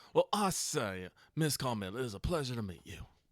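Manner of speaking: put-on courtly Southern gentleman accent. Playing a character greeting miss carmel, in a southern gentleman voice. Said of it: "that Southern gentleman".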